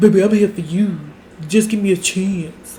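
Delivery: straining put-on bass, pushed low, trying too hard. Retelling how Mister Thing spoke to Erica, imitating his forced deep voice. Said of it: "tried to put on a deep voice".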